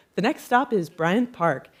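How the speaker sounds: automated, subway-style announcer voice. Describing New York City subway announcements: imitating subway female announcer voice. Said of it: "you'll hear a female voice say".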